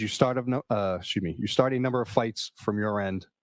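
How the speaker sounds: normal talking voice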